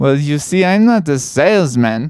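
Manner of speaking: put-on German-accented voice. Playing a plumber answering a caller who doesn't believe in plumbing, German accent. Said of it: "And I am a fat German boy".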